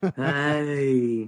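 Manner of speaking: grown-man voice, drawn-out "hey". Retelling how a baby nephew says hey: imitating nephew's grown-man "hey". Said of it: "he sounds like a grown-ass man when he says, hey".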